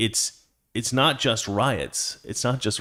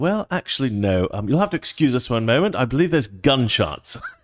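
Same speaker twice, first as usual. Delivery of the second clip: put-on calm, understated English newsman voice. Imitating a news reporter who keeps reporting through gunshots: imitating an understated english reporter. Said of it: "So English, so English".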